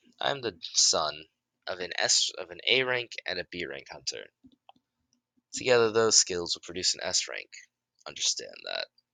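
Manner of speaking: plain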